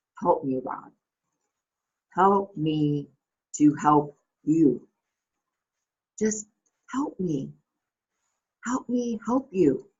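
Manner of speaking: slow, begging, pleading voice. Retelling a movie scene as Jerry Maguire: imitating Jerry Maguire pleading. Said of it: "pleading and begging with Rod".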